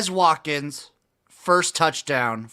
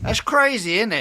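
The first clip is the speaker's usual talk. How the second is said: put-on British accent, pitched up; 7 semitones higher than usual. Reading out a forty-to-one bet, British accent. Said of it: "That was your best British accent".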